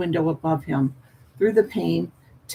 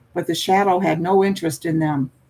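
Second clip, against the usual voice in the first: ordinary delivery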